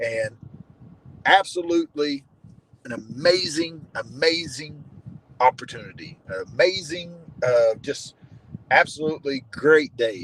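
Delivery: slow, lightly sarcastic, gushing fake enthusiasm. Describing a day spent paying taxes: sarcastic. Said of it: "I'm being a little sarcastic".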